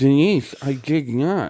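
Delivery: acted, slow, mangled numb-mouthed speech. Retelling a film scene after an arrest: imitating numb-mouthed speech. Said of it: "her mouth isn't working 'cause it's all numb".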